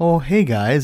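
bashful, shy, hushed, quiet voice. Retelling how Brendan Fraser walked in and greeted them: imitating a shy, quiet Brendan Fraser. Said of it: "shyly walking in, like, quiet, almost like".

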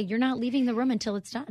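ordinary talk, nothing marked

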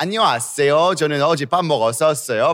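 put-on very slow Korean with an Italian accent. Showing how Italian speakers sound in Korean, imitating Italian-accented Korean. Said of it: "the Italian's accent".

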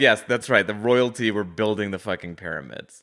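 ordinary talk

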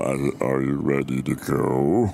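very slow, deep demonic drawl, go stretched. Speaker recounts turning to a friend in the boat, possessed devil voice. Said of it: "on the devil voice".

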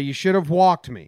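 ordinary talk, nothing marked

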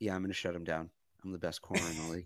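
quietly confident, hushed, very soft half-whisper. Retelling a player talking to reporters at his locker: imitating Stephon Gilmore half-whispering. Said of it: "He's, like, whispering".

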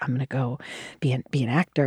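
put-on hesitant, uncertain, tentative voice. Retelling an answer to the casting director's question: imitating own tentative answer. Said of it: "I'm saying it very tentatively".

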